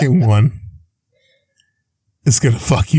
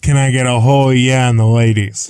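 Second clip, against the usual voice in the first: usual speaking voice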